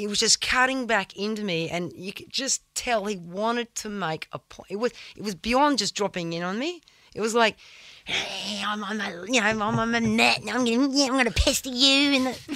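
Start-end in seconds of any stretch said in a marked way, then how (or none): 8.0-12.1 pestering, pesky creature voice. Retelling a wave where a creature kept cutting in: imitating the pestering creature. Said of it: "Great impression".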